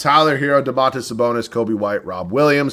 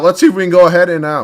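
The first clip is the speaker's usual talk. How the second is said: voice suddenly breaking higher mid-phrase; 5 semitones higher, 5 dB louder than usual. Going through a basketball team lineup, with a voice cracking. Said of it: "a little voice crack there".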